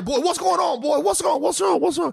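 very high, creaky, rough put-on dad voice. Retelling a father coming out at night: imitating dad. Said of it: "he came out there".

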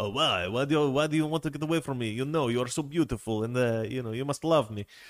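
bad put-on French accent. Retelling a cartoon scene with a skunk and a cat, bad Pepé Le Pew impression. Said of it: "that accent was terrible".

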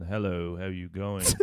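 smooth, debonair, suave ladies' man charm. Describing split personalities, smooth James Bond ladies' man. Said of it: "You get this really smooth James Bond ladies man".

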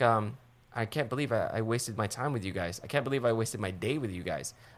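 ordinary talk, nothing marked

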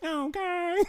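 very high, weird, odd little voice. Imitating a cashier at Panda Express: Jordan's weird voice. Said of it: "She got that weird voice".

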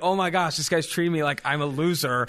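normal talking voice

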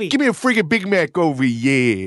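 put-on thick Brooklyn accent. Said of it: "I get real Brooklyn".

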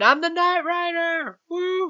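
very high-pitched, whooping shriek and scream. Retelling a character who joins the car chase, imitating him screaming. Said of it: "He's just screaming".

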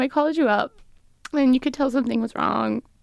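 on the verge of tears. Retelling to Mom the call home about the pregnancy, on the verge of tears. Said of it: "Oh, I'm gonna cry".

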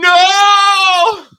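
screaming, high and loud.

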